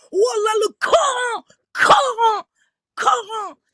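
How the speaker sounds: high-pitched, mocking, shouted rant.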